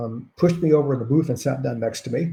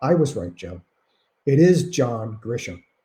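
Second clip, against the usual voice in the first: ordinary talk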